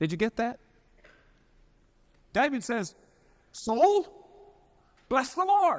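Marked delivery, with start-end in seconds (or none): 3.5-5.8 high, loud, commanding called-out tone. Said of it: "David is giving a command to his soul".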